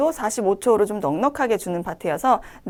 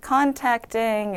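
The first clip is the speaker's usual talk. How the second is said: contacting lengthened, drawn out long. Reading practice for a clinic phone greeting: contacting drawn out long. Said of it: "이렇게 좀 길게 읽어주시면 되겠고".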